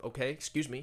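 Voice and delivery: put-on harsh voice. Retelling how strangers answer an offer of help: imitating a harsh tone. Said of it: "harsh tone or whatever".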